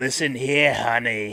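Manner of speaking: put-on raspy, smoker's-rasp diner-lady voice. Describing how Alyson Hannigan's voice changed: Alyson Hannigan's diner-lady voice. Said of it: "her voice changed to like a the diner lady's".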